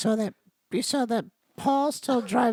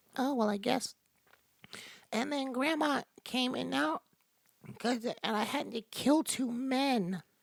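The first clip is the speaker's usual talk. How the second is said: put-on soft, sheepish, a little embarrassed kid voice; 3 semitones higher, 5 dB quieter than usual. Playing out what the speaker and Jazz will say to each other, a little embarrassed kid voice. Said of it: "like a kid that's a little embarrassed".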